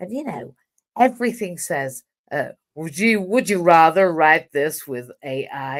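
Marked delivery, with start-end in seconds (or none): 2.7-5.8 bad, fake, put-on American accent. Quoting what everything says, in a terrible American accent. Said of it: "that terrible American accent".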